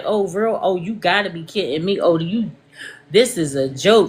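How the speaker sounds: put-on mocking laugh while talking. Retelling how she reacted to the situation: imitating someone laughing while talking. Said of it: "when she did the whole laugh".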